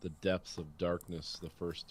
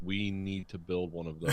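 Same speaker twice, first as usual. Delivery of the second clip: normal talking voice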